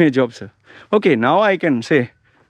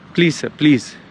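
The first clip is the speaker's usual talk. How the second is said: acted-out humble, imploring, pleading begging voice. Describing job hunting, imitating a job seeker: someone begging. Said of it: "You're begging".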